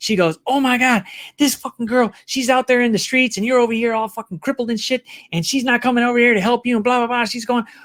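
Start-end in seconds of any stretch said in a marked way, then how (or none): 0.5-7.2 put-on angry, worked-up, furious ranting tirade. Retelling how the nurse reacted on hearing about the girlfriend: imitating a furious nurse. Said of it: "the nurse just fucking flipped the fuck out".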